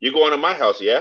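put-on British accent, tagged "yeah" at end. Showing how British speakers end a question with yeah: imitating British speech with tag yeah. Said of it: "Instead of saying right, they say yeah".

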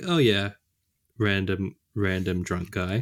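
ordinary talk

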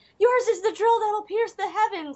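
very high, shrill screaming outburst. Telling how a kid suddenly screamed at him on a walk: retelling a kid's scream. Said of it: "he starts screaming at me".

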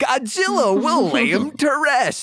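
very high-pitched put-on caricature voice. Quoting a studio's statement about the franchise: Trump voice. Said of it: "I don't know why I'm talking like Trump".

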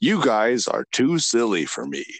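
casual, slow, swooping know-it-all smartass voice. Doing an impression of a friend who is a casual smartass: impression of Mike. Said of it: "your impression of him".

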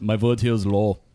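Germanic-sounding accent on every word. Showing the accent he basically used, in a Germanic accent. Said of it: "I basically used a Germanic accent like this".

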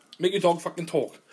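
ordinary talk, nothing marked

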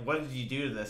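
ordinary talk, nothing marked

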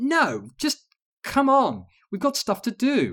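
very high, loud, startled yelping protest. A narrator reads a woman fending off a friend's grab, with a yelp. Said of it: "Alex yelped".

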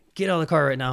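mock furious, enraged barking voice. Retelling a security guard losing his temper: imitating an enraged security guard. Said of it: "he just lost his shit on Mike".

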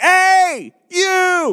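very high, shrill yelling voice. Retelling how he yells at cashiers behind plexiglass, retelling a yell at a cashier. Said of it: "I'm like".

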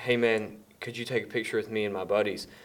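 mock-nervous imitated child's voice. Retelling how a kid asked a player for a photo, imitating a nervous kid asking. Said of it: "he's so nervous".

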